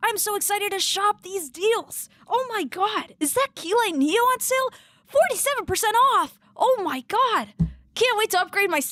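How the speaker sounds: very high, full put-on cartoon character voice. Joking about shopping sale deals tomorrow, Ash Ketchum voice. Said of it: "bring out my my like my Ash Ketchum voice".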